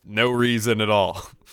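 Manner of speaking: ordinary talk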